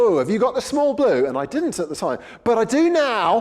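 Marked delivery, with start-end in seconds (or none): 0.0-1.3 mock competitive, point-scoring, one-upping tone. Retelling what someone asked two years ago, imitating a point-scoring question. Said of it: "said it in that point scoring way".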